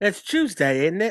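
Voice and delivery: bad put-on Cockney accent. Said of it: "I like Cockney".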